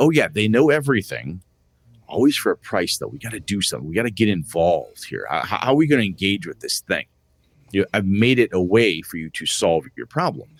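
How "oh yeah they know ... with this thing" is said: ordinary talk, nothing marked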